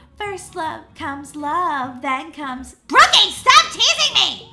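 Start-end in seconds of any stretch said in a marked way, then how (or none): 2.9-4.3 yelling, much louder and higher. A girl teased about liking a boy yells back at the teaser, yelling. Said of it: "why did you yell?".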